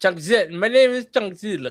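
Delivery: bad put-on Russian accent. Joking about a made-up name, attempting a fake russian accent. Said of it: "I can't do a Russian accent".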